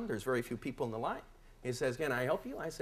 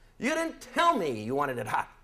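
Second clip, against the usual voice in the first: rushed and loud, with a raised voice; 6 dB louder than usual. Retelling what person number one turned and said to him, loud voice. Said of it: "in a loud voice says".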